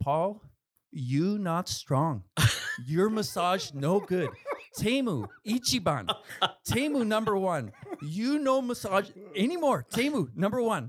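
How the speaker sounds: very high, slow, blunt grandma voice. Retelling what grandmother said after the other massage: imitating grandmother. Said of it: "she looks me dead in the eye and she says".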